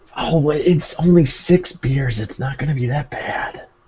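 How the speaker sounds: whispered speech. Pressing another character in a scene about the beers: whispering. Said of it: "we're whispering".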